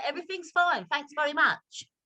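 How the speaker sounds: put-on London accent. Asked to speak in a london accent, the speaker says goodbye: london accent. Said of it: "say goodbye in your London accent".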